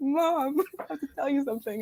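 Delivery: mock tearful voice, words coming through crying. Retelling sitting with her mom at a diner, imitating her own crying. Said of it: "but I was crying".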